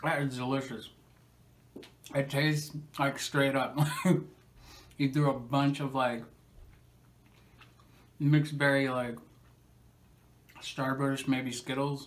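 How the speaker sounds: speaking while chewing, mouth full. Tasting a fruit chew on camera, talking with mouth full. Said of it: "with this in my mouth".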